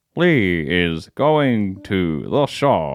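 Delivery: low, robotic speech-computer voice. Everyone takes a turn at the same bit; Stephen Hawking impression. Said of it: "do their best Stephen Hawking impression".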